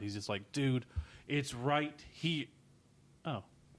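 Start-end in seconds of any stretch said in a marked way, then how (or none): 0.5-2.5 slow, drawn-out, fed-up frustration. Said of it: "he was so frustrated with Scott".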